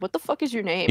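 ordinary talk

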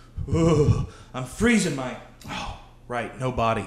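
quiet low-pitched voice. Performing a run of announced impressions, now do a Ted Williams impression. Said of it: "This is my impression of Ted Williams".

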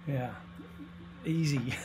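soft, dry, sarcastic tone. Asked to explain Western cultural Christianity, the speaker replies: sarcastic. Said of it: "I'm saying that sarcastically".

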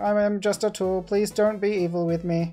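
high, mechanical robot voice. Retelling what a game's robot says, imitating a robot voice. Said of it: "so the robot is just, he's just like".

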